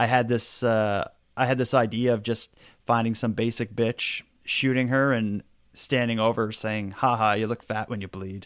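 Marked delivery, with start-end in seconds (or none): none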